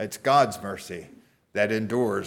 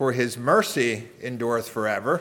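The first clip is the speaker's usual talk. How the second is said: "mercy" stressed, pitch rising at the end. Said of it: "You could emphasize".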